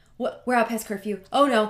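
acted panicked freak-out. Retelling being caught out past curfew: acting out own past freak-out. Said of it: "I was freaking out".

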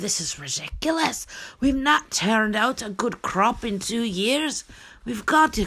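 put-on high, Scottish-sounding accent. Voicing people deciding to leave after failed crops, accidental scottish accent. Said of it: "I think I'm doing Scottish".

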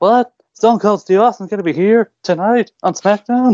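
put-on cracking teenage voice. Retelling a SmackDown segment, the speaker voices Michael Cole in a high-pitched pubescent voice. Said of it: "in his very high-pitched, pubescent voice".

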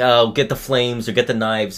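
plain

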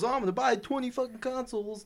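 high mocking voice. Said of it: "So when someone goes".

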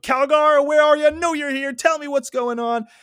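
very high, loud yelling shout. Recounting a character calling out for another in the Golden City; retelling a yell. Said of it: "starts yelling".

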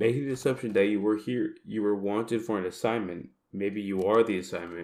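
ordinary talk

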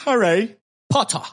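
clumsy fake English accent. Saying the book series name the english way: bad put-on english accent. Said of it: "soy un asco imitando acento inglés".

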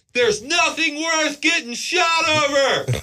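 very high shout carried from a distance. Speaker retelling yelling at a man from far away, retelling a yell. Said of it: "I was like yelling at him from far away".

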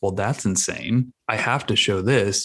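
normal talking voice

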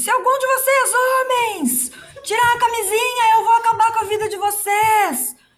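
play-acted high, shrill, yelled outburst. Retelling how a woman left the health center, imitating someone shouting. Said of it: "saiu gritando do posto de saúde".

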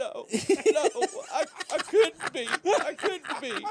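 very high, loud, slow wailing bawl. Retelling his answer to a doctor in the er: imitating himself bawling. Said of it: "And I was bawling my eyes".

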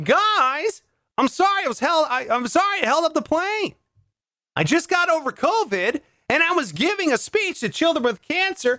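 the word guys held long, stretched out and high. Joking about a late flight, doing a Tom Hanks impression. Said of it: "That's my Tom Hanks impression".

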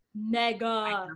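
stressing the word mega. Talking about a player's contract extension, heavy emphasis on mega. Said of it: "I cannot put more emphasis on the word mega".

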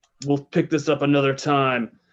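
speaking through clenched teeth. Speaking as Torek while looking him in the eye, through gritted teeth. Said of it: "through my teeth".

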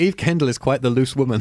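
plain

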